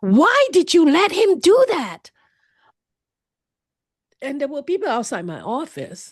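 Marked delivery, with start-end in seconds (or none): 0.0-2.1 mock scream, loud, high-pitched, top of voice. Retelling a colleague's reaction to hearing about abuse: imitating a scream.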